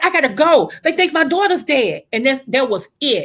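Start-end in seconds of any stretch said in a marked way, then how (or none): 0.0-2.0 put-on screaming, higher. Retelling the moment she learned her daughter might be dead: retelling her own screaming. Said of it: "So I'm screaming".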